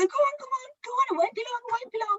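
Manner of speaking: very high, doting, fussing, reassuring voice. Acting out an owner leaving a dog at the salon: imitating an owner's fussing voice. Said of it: "And then they'll go".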